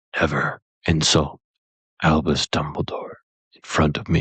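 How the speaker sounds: quiet, low, menacing, threatening whisper. Retelling a film scene, quoting Hagrid: Hagrid whispering menacingly. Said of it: "whispers it quietly and menacingly".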